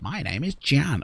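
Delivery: chirpy, high, chirping little creature voice. A tiny winged creature introduces itself to the listener, in a chirping creature voice.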